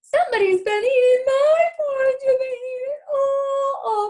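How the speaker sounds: very high, loud tiny wee voice, all stretched. Narrator reading the three bears story aloud, voicing Baby Bear: tiny wee voice. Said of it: "in his little tiny wee voice".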